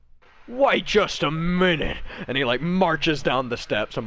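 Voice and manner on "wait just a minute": high, loud, slow sharp call. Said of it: "you just hear him go".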